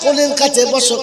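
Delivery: fervent, high, loud, preaching exhortation.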